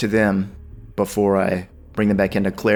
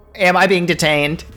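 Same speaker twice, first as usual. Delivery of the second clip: high, loud, demanding scream. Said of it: "he just screams".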